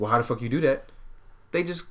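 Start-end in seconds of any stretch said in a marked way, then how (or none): none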